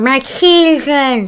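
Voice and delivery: mumbled, muffled, unintelligible words through fake teeth. Showing how the villain talks through a mask with teeth: imitating the Racnoss talking through mask teeth. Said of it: "she's kind of talking like this".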